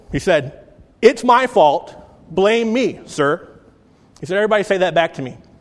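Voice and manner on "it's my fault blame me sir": mock cranky, blustery, boisterous voice, very slow, drawn out. Retelling what a former Air Force teacher said, imitating a grumpy voice. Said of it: "everything he said was in a grumpy voice".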